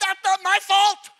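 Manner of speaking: very loud, high-pitched shouted yell. Recalling a hamburger worker yelling at them, the speaker acts out retelling a yell back. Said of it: "I wanted to yell".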